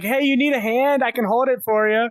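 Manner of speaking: smart-aleck, cheeky, high call across. Retelling calling out to a man at a mall fountain: retelling a holler. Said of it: "I just hollered to him".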